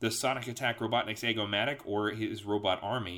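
ordinary delivery, nothing marked

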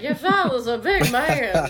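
put-on slow, drunken transatlantic accent with a drawl. Recalling getting to play a role, acting drunk with a transatlantic accent. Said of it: "trying to act drunk with a transatlantic accent".

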